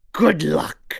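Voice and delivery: gruff, loud voice. Reading the lore aloud as Killian: gruff, rough Killian voice. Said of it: "It was very gruff and, and rough".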